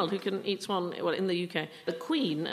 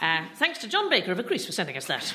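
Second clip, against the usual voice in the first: rushed out very quickly; 4 dB louder than usual. Thanking someone for sending something in, said very quickly. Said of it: "I'll say it very quickly".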